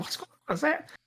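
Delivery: high, stunned disbelief. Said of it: "a bit of disbelief in his voice".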